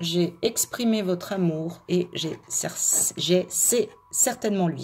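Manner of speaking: halting, slow, fumbling phrasing, stumbling over words. Speaker addressing the audience, stumbling over words. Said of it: "je bafouille un peu".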